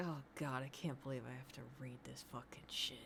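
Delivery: mock very low, reluctant, bored droning mutter. Imitating the male reader of a book's content warning, sounding mock-bored. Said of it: "He sounds bored. He's like".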